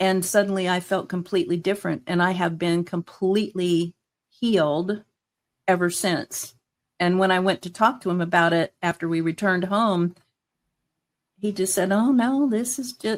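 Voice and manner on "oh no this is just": high, put-on Southern American accent. Retelling what he said when the speaker went to talk to him, imitating a southern accent. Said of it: "he has a Southern accent".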